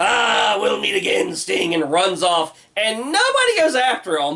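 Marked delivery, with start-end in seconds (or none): 0.0-1.7 rough, raspy, creaky character voice. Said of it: "and he's like".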